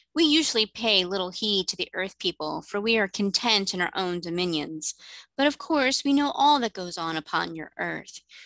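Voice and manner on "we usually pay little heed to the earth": plain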